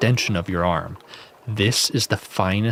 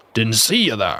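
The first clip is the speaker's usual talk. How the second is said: put-on pirate voice, bellowed out loudly. Narrator voicing the blacksmith character in a story, in pirate voice. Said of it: "we're going to go with the pirate voice".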